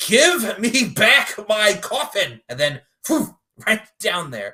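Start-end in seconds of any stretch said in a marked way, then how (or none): 0.0-2.4 put-on huge, high yell, dragged out very slowly. Retelling a story, acting out a man's big yell. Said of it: "he lets out this big yell".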